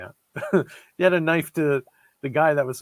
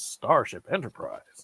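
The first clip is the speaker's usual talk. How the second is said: breathy, hushed, half whispered; 3 semitones lower, 5 dB quieter than usual. Imitating how Kirk says the line: William Shatner impression. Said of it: "he's imitating Shatner here".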